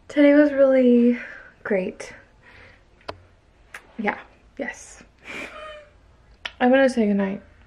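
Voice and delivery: exhausted, tired, worn-out, sleepy voice. Saying goodnight to viewers at the end of the day, exhausted, tired voice. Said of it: "I am exhausted".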